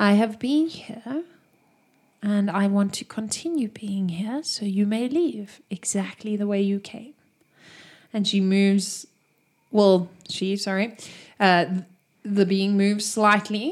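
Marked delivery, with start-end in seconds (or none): 0.0-7.1 androgynous, genderless voice. Voicing a being who speaks to the party: genderless voice. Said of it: "it's almost a genderless voice".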